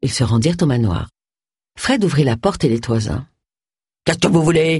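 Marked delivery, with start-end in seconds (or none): 4.0-4.8 growled words. Fred, the butler, opening the manor door to visitors, growled.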